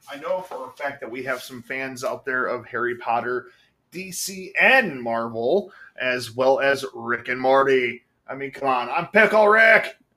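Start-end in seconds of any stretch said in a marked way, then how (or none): 8.9-9.9 corny put-on cartoon-character voice, high-pitched and loud. Talking to fans of Rick and Morty, doing a cheesy Rick impression. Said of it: "my cheesy ass impression of Rick".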